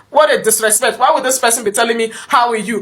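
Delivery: plain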